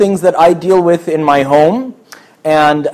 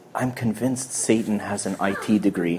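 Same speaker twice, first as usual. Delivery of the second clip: very low, quiet, hushed whisper; 8 semitones lower, 15 dB quieter than usual. Retelling what a priest whispered in his ear at a talk, retelling a whisper. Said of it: "he whispers in my ear".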